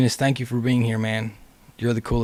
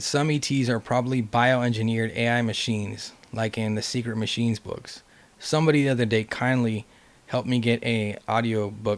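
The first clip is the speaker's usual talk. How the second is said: normal talking voice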